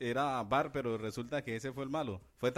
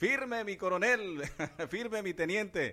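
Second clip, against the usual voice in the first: high, snapped, barked military shout; 7 semitones higher than usual. Recalling soldier Patascuy's call to attention for listeners, retelling a shout. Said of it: "Eso gritaba firme".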